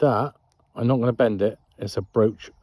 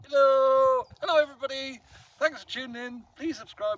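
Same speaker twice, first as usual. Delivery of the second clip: very high, loud shouting; 13 semitones higher, 3 dB quieter than usual. Speaking loudly to the camera after breaking the mic: speaking loudly, shouting. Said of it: "so I'm gonna have to shout".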